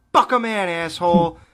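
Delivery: put-on violently angry delivery. Retelling repeating a line while driving, imitating own violent angry delivery. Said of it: "trying to say it more violently each time".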